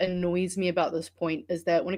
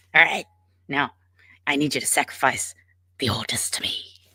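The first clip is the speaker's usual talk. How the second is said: breathy, whispered little goblin voice; 5 semitones lower than usual. Speaker imagining the brainworm as a goblin sending commands: little goblin voice. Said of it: "like this little goblin that's just like".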